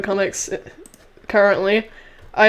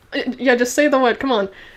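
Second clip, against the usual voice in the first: ordinary talk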